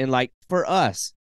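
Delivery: ordinary talk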